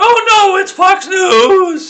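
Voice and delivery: shrill, very high, very loud harpy shriek. Retelling how people reacted to the request, doing a mock harpy shriek. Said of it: "shrieking like harpies".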